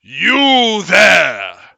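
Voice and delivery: very loud swooping bellow, long drawn-out "you". A game master voices a dwarf calling to a fallen adventurer, bellowing loudly. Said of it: "bellows in a loud voice".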